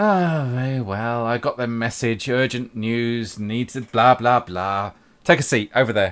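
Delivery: put-on cranky, crotchety, grumpy old woman voice. Game master voicing the lantern-carrying woman greeting the party, grumpy old woman voice. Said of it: "the grumpy old woman again?".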